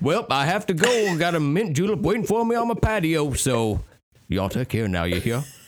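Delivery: high-pitched Southern character voice. Signing off from a bit to friends: Foghorn Leghorn voice. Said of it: "Foghorn Leghorn away!".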